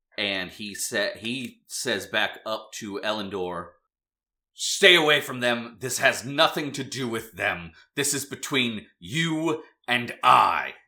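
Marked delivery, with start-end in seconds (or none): 4.6-10.7 loud bellowing voice. Voicing the mayor ordering someone to stay away: the mayor bellowing. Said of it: "the mayor bellows".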